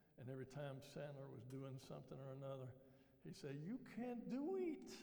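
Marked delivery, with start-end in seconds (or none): 3.7-4.9 put-on Creole-accented speech. Quoting a movie character during a lesson, thick Creole accent. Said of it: "spoke with this thick Creole accent".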